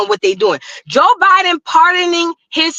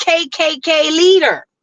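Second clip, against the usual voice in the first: normal talking voice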